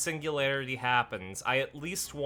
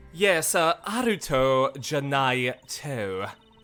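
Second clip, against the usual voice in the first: put-on British accent; 5 dB louder than usual. Speaking a line while playing Professor Layton: British accent. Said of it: "why are you doing a British accent?".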